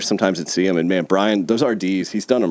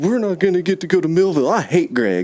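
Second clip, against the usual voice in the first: mock blubbering wail, very high, crying kid whine; 10 semitones higher than usual. Retelling how Jimmy reacted to an ultimatum about Millville, imitating Jimmy crying. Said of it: "Jimmy just starts crying".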